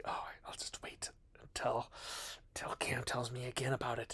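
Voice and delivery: soft, whispered, lazy voice. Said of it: "You've just been like".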